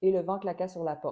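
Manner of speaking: flat delivery, every syllable evenly unstressed. French speech lesson, deliberately removing tonic accents: flat, no stressed syllables. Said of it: "j'essaie volontairement d'enlever les accents toniques".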